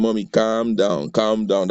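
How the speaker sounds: plain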